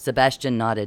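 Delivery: plain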